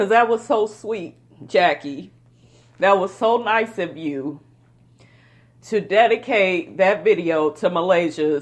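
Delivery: choked up, voice breaking, fighting back tears. Addressing Jackie about her video dedication, getting choked up. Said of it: "I'm look getting all choked up".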